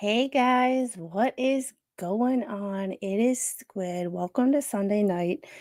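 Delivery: asmr-style soft voice. Host greeting viewers on Sunday night while the little one is put to sleep, ASMR voice. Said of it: "You get my A S M R voice".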